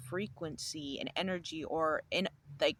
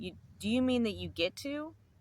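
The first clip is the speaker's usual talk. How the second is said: put-on stern, pointed, pitched-up tone; 7 semitones higher, 4 dB louder than usual. Retelling a reply to a coworker: retelling a stern remark. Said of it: "I said very sternly".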